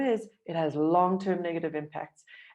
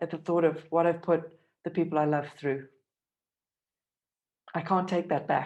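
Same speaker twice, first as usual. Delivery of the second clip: voice catching, choked up on the edge of tears. Reflecting on what they put the people they love through, voice choking up. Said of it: "I'm about to cry".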